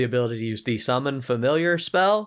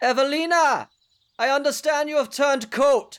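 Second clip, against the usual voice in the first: very high, amplified, echoing, carrying call; 13 semitones higher than usual. Game master voices an unseen figure calling out over the hillside; amplified voice echoing. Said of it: "a voice, amplified, comes over the hillside".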